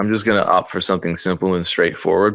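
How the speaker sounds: plain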